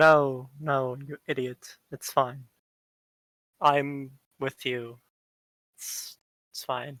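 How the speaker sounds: spoken with a sigh. A kobold answers another kobold who asks about alerting the guards, with a sigh. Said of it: "I am normal human. That's my name. What? And then you hear, hello! Are those friends? I like friends. Hello! And then you just see this body shift a little bit in an odd pattern".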